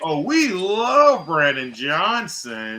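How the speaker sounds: play-acted, very slow, dripping sarcastic gush. Retelling three officers' answer to the speaker's question; retold very sarcastic remark. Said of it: "They said it very, very sarcastically".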